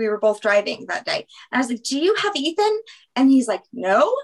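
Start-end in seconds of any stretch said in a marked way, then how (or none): 1.8-2.8 high, frantic, freaked-out, panicked voice. A parent retells phoning the child's dad about Ethan, retelling a panicked question. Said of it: "I'm like freaking out".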